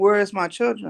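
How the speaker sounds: normal talking voice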